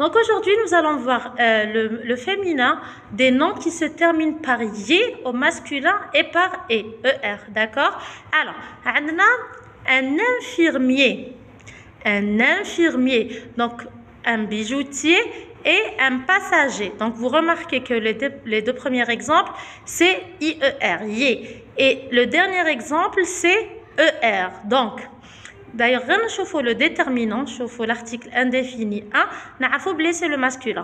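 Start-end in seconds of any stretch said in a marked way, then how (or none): 9.9-13.4 slow, carefully spaced model pronunciation. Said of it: "teacher modelling a new word".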